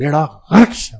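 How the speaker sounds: heavy stress on غرق. Recalling how someone used to say this phrase, heavy stress on غرق. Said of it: "غرق کو کچھ زیادہ ہی طاقت دیتا تھا".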